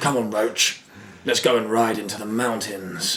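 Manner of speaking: put-on, way too deep, exaggeratedly deep acted voice. Show how the Witcher actor sounded at points, in Henry Cavill's too-deep put-on voice. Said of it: "he was talking like this".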